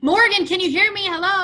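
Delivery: high, shrill screaming shout. Showing how people sound when they talk too loud: screaming. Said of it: "if they're screaming".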